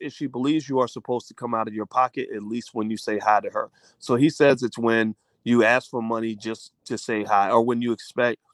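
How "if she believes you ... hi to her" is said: ordinary talk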